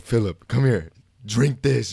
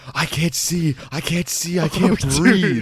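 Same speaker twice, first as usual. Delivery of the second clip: put-on scream, higher pitch; 7 semitones higher than usual. Retelling how a friend screamed in the bathroom: imitating someone screaming. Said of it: "he's screaming".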